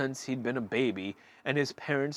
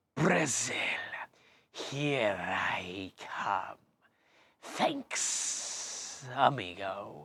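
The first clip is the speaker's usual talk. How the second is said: low, soft, sibilant snake-like hissing voice; 2 semitones lower, 5 dB quieter than usual. A narrator reads an escaping snake's parting words in a low, hissing voice. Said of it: "a low, hissing voice said".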